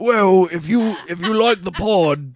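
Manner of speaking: loud Cockney bloke voice. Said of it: "think of, like, Sean Deitch".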